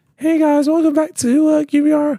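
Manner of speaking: very high, squeaky, high-pitched voice. Doing a channel intro for friends: high-pitched voice. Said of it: "High pitched voice".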